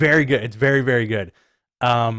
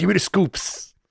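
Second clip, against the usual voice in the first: put-on voice with Brooklyn accent; 7 semitones higher than usual. Continuing the Dave Meltzer impression. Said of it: "That's how he talks".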